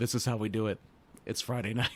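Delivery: dry, flat, expressionless deadpan. Retelling a line John Morrison says: John Morrison deadpan. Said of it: "Morrison deadpans at one point".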